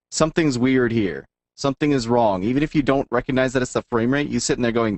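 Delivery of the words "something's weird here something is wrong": ordinary talk, nothing marked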